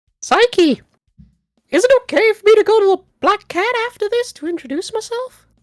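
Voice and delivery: classic cartoon mouse character voice. Reading a game line aloud after being asked: Mickey Mouse voice. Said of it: "Mickey Mouse voice".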